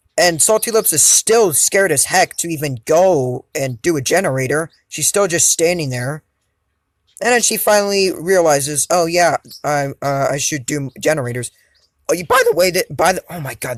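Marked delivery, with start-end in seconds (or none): 12.1-13.8 voice breaking and cracking mid-phrase. Narrating gameplay and trailing off mid-sentence, voice cracking. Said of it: "that voice cracks".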